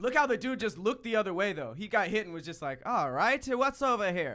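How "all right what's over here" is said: bad, slow, horrible put-on Irish accent. Imitating a man in a video who just got hit: horrible irish accent. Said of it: "That was horrible Irish accent".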